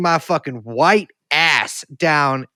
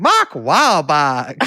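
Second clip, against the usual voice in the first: botched, poor, off-target Carolina accent attempt; 3 dB louder than usual. Trying to show how a guy said a name, in a bad carolina accent. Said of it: "a guy say Mark Wahlberg in a Carolina accent".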